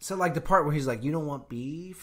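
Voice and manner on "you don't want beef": put-on strange, nearly Spanish accent. Retelling a movie scene, imitating Jared Leto's Joker. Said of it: "he was almost trying to say it in a Spanish accent".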